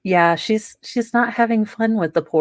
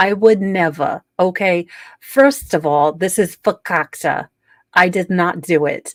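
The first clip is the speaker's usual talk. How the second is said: put-on New York accent. Speaker bringing back a mocking bit about Donna Adelson, Donna Adelson New York accent. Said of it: "my New York accent".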